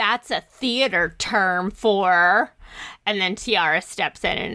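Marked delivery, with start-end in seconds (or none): 0.0-2.5 slow, drawn-out, patronizing, condescending, talking-down tone. Retelling a character's line from the movie: condescending Sharpay voice. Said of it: "very condescending is like".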